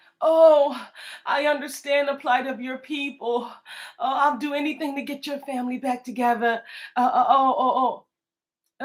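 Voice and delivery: phony, sarcastic, put-on concern and sympathy. Retelling how a man acted ten days later: mocking imitation of fake sympathy. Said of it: "he's acting like he's".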